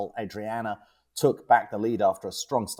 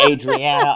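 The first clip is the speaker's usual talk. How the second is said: very loud, high, nasal American accent on "Adriana"; 6 semitones higher, 12 dB louder than usual. Saying a name the speaker says needs an american accent on adriana. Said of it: "I have to do an American accent to say that name".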